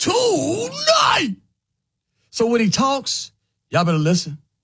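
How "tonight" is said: very high pitch, word long and drawn out. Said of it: "let me say it like [name]".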